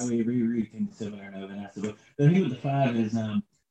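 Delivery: quiet mumbling under the breath. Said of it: "Stop mumbling".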